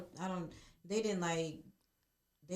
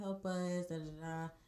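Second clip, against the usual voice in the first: plain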